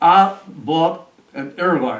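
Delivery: put-on easy, real nice drawled Southern accent. Retelling what an old man said on entering the office: imitating a soft southern drawl. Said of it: "And a real nice Southern drawl".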